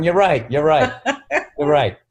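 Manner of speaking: mock laughing delivery. Retelling own reply to a three-year-old daughter: retelling own laughing reply. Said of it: "and then I just laugh going".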